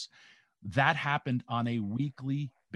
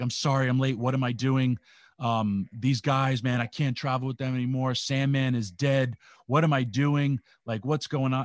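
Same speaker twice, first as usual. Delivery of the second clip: acted tearful pleading, louder; 5 dB louder than usual. Retelling a rookie who broke down crying in a private room: imitating someone crying. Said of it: "He drops his bag and he starts crying".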